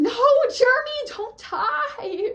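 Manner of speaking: long, very high, shrill, stretched-out scream. Retelling watching a character die at show's end: imitating own screaming. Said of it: "I was screaming".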